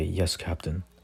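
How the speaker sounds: ordinary talk, nothing marked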